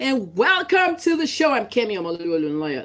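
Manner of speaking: loud, swooping on-air radio announcer delivery. Speaker showing how they sound on radio, in a radio announcer voice. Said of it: "I'm good on radio".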